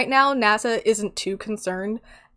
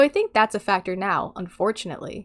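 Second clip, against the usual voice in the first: normal talking voice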